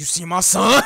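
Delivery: loud, mock mad-crazy voiceover delivery. Quoting a funny line from a voiceover video: imitating a crazed voiceover line. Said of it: "going mad crazy, talking about".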